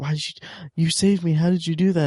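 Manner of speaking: whispered voice. Retelling how a movie character asks how he saved her: imitating someone whispering. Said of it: "whispering to him".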